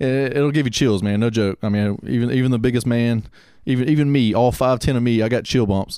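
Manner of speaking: ordinary talk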